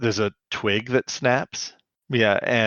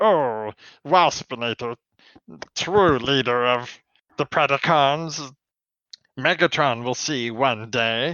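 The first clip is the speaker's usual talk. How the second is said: rambling, ranting little monologue; 4 semitones higher than usual. Retelling a character talking to himself in the air: imitating Waspinator's ranty monologue. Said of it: "ranty monologue where he's like".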